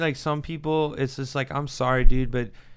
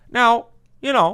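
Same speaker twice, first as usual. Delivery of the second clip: high, raised, formal podium speech voice; 10 semitones higher, 7 dB louder than usual. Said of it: "Obama's biggest selling point was he could get on stage and be like".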